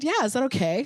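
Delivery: bright, cheery, super upbeat, chirpy customer-service tone. Retelling what the insurance side said about the cost, imitating an upbeat voice. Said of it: "In the most upbeat voice".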